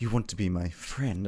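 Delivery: hushed half-whisper, close to the ear. Retelling what he half-whispers in his ear, half-whispering. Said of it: "he whispers".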